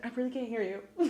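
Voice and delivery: soft, hushed, barely audible half-whisper. Retelling a scene where a character starts half-whispering: imitating someone half-whispering. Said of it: "whispers again".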